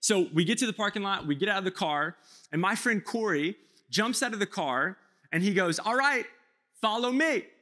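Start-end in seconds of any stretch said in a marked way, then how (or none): 5.8-7.4 put-on confident, self-assured voice, pitched up. Retelling a friend leading the group from the car: imitating Corey's confident tone. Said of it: "he said it so confidently".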